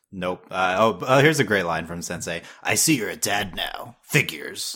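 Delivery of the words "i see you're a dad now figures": put-on crow voice. Quoting a great line from Sensei to co-hosts, in a Sensei crow voice. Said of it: "That's your crow voice".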